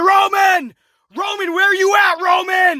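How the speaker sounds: put-on high, furious, drawn-out angry scream. Retelling a wrestler's angry call to an injured rival: imitating Edge screaming. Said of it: "he's screaming".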